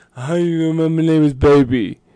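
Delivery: very loud, muffled and unclear voice. Imitating how a quoted line sounded, in a muffled voice. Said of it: "This was like a muffled, like".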